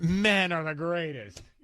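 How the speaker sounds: mocking, sarcastic tone meaning the opposite. Showing how a line sounds in a coworker's tone: imitating a sarcastic tone. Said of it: "you have her tone".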